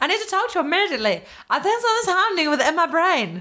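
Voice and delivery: put-on Dutch accent. Reading a line while the voice goes weird: put-on Dutch accent. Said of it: "That's what Dutch people sound like".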